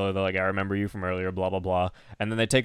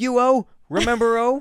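acted scream, higher and louder; 6 dB louder than usual. Retelling a scene where a character screams for so long: imitating a character screaming. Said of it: "She screams it for so long".

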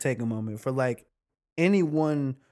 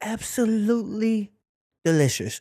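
put-on British chef accent, higher pitch; 6 semitones higher than usual. Retelling talking like MasterChef's chef after bingeing it: Gordon Ramsay British accent. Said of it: "I started talking with a British accent like Gordon Ramsay".

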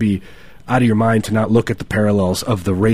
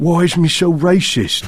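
put-on British accent, pitched up; 8 semitones higher than usual. Speaker doing their British accent for a listener: British accent. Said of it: "That's my British accent".

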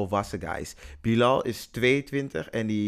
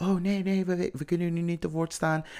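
high, very nervous, all-out flustered voice; 8 semitones higher than usual. Retelling how a woman reacted when they went to the manager: imitating someone very nervous. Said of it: "helemaal nerveus".

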